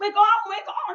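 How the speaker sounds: loud, high-pitched scream. Retelling a boy watching tv in the lounge, imitating someone screaming. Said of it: "He's screaming".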